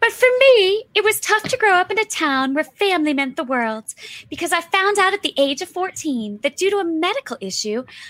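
patchy, uneven put-on Southern accent. Introducing yourself and telling your story, in an uneven Southern accent. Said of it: "my Southern accent is terribly uneven tonight".

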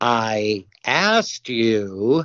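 abrupt, demanding, insistent tone. Retelling what a man said to the audience in the dark: retelling a loud line. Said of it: "And he says it really loud".

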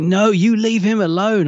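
high, slow, distressed, upset protest. Discussing Sarah Jane's bond with the Doctor: imitating Sarah Jane upset. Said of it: "She's so upset".

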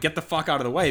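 ordinary talk

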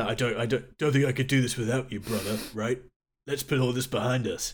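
passive-aggressive, alpha, macho delivery. Quoting a public plea in a passive-aggressive macho way. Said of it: "passive-aggressive alpha macho way".

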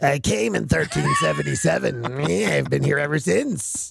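growly, rough, creaky demon voice. Riffing about a possessing demon, the speaker talks as the demon in a demon voice. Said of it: "Is that your demon voice?".

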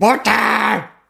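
play-acted, very high shout in unison. Retelling how everyone in the cafe answered at once: imitating people shouting. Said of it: "they all shouted in unison".

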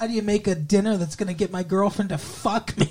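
put-on little kid voice. Retelling a man talking to his mom on the phone, imitating a child's voice. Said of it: "Doing that in a child's voice".

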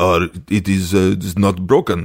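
imitated Russian accent. Retelling the doctor's answer about the broken model: imitating a russian accent. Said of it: "and he's Russian".

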